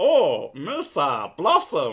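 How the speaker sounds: loud, bouncy, belted sing-song voice swooping up and down. Comparing the Blossom voice to another character: Jar Jar Binks voice. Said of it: "It is very much that voice".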